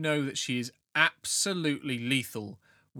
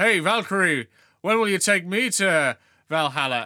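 put-on loud, high, tipsy man's drunken holler; 6 semitones higher, 8 dB louder than usual. Voicing a drunk gentleman in town calling out to her; drunken shout. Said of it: "had a little bit too much to drink reaches over and he shouts".

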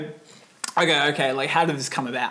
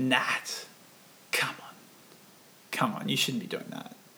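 put-on breathy half-whisper, disappointed, reproachful; 3 semitones lower, 9 dB quieter than usual. Retelling how mum reacted to a Subway lunch: imitating a disappointed mum. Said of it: "a very disappointed".

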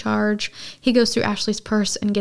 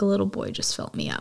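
put-on cold tone, quieter; 5 dB quieter than usual. Recapping a scene, retelling a woman's reply to how it felt, mock-cold. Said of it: "she very coldly says".

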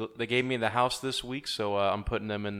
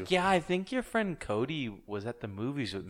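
put-on Canadian-sounding accent; 3 semitones higher, 4 dB quieter than usual. Acting out what a woman told the speaker, in a Canadian accent. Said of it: "Why'd you make her sound Canadian?".

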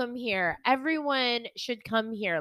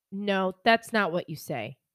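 put-on nasty tone, lower pitch; 4 semitones lower than usual. Retelling how a priest scolded a friend at communion: imitating a nasty priest. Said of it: "'cause he was so nasty".

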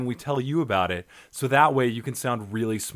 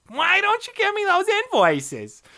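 shrill put-on voice, much higher. Guiding a visualization, the speaker mimics a remembered scenario: imitating Barbara's shrill voice. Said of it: "her shrill voice".

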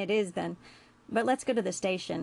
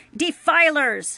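very loud, venomous, spat-out word; 8 semitones higher, 11 dB louder than usual. Reading a story, the ship's computer shouts at intruders: spitting venom. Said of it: "spat venom with the word".

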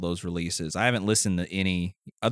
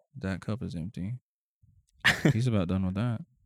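put-on android server voice. Joking about a robot waitress scanning the table: imitating a robot waitress. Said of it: "She's just scanning the table".

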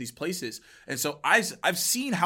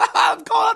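crazed, shrill, very high, very loud hyena cackle; 11 dB louder than usual. Speaker mocking how nervous people laugh too wildly, imitating a crazed hyena laugh. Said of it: "They sound like a hyena".

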